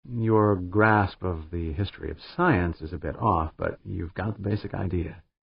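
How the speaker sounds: ordinary delivery, nothing marked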